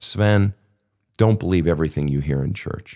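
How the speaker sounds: grave, earnest, low, very serious tone. Retelling a mother's warning in the kitchen: imitating someone speaking very seriously. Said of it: "she says very seriously".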